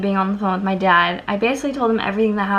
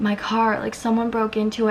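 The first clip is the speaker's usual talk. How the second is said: put-on tearful sobbing. Retelling phoning dad after someone broke into the car, retelling her own sobbing. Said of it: "and I'm crying".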